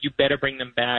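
plain

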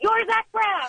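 acted, shrill, very high, suddenly blurted shout. Recounting crossing paths with someone famous, retelling a yell. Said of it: "and I just yelled".

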